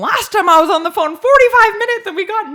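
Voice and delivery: shrill, very high, loud yelling. Retelling a phone call about a missing box, the speaker is retelling own yell. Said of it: "I was just like yelling at him".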